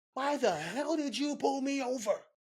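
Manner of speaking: very high, enraged, furious yelling scream. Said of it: "screaming at a cop".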